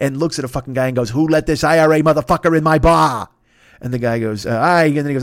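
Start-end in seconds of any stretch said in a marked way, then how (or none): 1.1-3.3 loud, bad put-on Boston accent. Act out a favorite movie moment to a listener, in Jack Nicholson's bad Boston accent. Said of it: "does a bad Boston accent".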